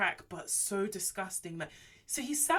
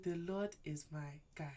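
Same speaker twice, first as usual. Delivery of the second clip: put-on pillow-talk voice, quieter; 3 semitones lower, 10 dB quieter than usual. Retelling how he led her in prayer: imitating a pillow-talk voice. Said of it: "that voice guys put on at night when you're trying to, like, do pillow talk".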